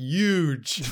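"huge" pronounced "yuge", drawn out. Teasing the other speaker about how they say huge: saying huge like Donald Trump. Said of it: "you say it like Donald Trump".

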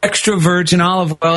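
ordinary talk

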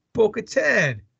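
acted, over-the-top debonair voice with swooping swagger. Retelling a favorite moment from the season, quoting his reply to Bo-Katan with put-on swagger. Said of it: "With some swagger behind his voice".

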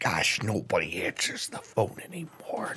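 whispered aside, muttered under the breath. Retelling a man who hangs up the phone, muttered under breath. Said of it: "under his breath, but, like, loud enough everyone can hear him go".

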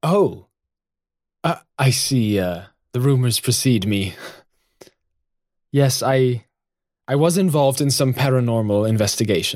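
mock-hesitant, put-on hesitation. Retelling a professor's answer to an interviewer's question, mock-hesitant reply. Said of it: "he sort of hesitates for a second and goes".

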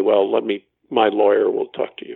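ordinary talk

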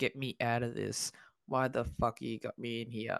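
put-on, slow, dragging, thoroughly miserable complaining voice. Voicing what a miserable-looking man seems to say: put-on miserable voice. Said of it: "He looks very miserable".

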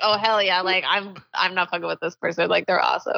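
usual speaking voice

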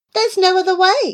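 very high, pressing, insistent. Narrator reading a woman answering a worried man's objection, insistent. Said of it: "Millington insisted".

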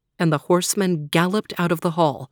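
plain

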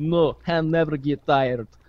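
put-on, slow, drawn-out Russian accent. Retelling what a Russian masseuse said, in a Russian accent. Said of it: "Kyle does a good Russian accent".

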